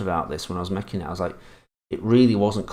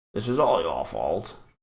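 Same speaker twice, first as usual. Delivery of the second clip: put-on plummy upper-class posh accent. Showing a simple way to do voices, put-on posh voice. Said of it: "So I just did like a posh voice".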